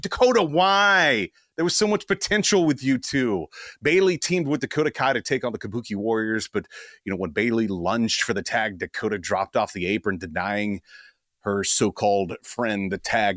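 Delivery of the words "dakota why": mock very high yell, "why" drawn out. Retelling yelling at the TV during a match: imitating own yelling. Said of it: "just yelling at it".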